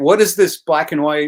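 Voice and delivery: ordinary talk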